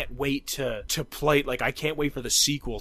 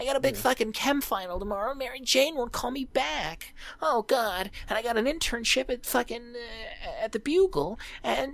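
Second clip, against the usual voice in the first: very high, mocking teen voice, pitched way up; 9 semitones higher than usual. Making fun of high-school Peter Parker, in a Peter Parker mocking voice. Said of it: "That's why I'm doing this voice to make fun of him".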